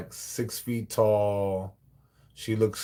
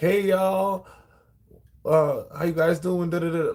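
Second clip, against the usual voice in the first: put-on overfriendly, pumped-up, big energetic delivery; 8 semitones higher, 4 dB louder than usual. Retelling how newcomers greeted the staff: imitating big energetic greeting. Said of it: "they come in on this big energy".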